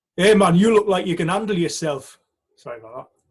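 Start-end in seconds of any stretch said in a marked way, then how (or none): 0.2-2.2 loud, put-on northeast English accent. Retelling what someone said to him, in a put-on northeast english accent. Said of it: "with my northeast accent".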